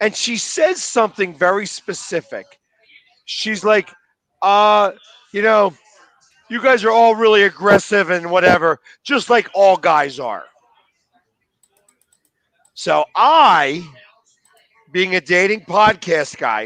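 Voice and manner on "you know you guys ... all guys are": ordinary delivery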